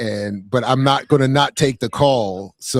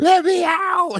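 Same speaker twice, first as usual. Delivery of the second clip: very high voice, pitched up an octave. Describing a man's voice, the speaker imitates it: his high voice. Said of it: "His voice is high. He's like".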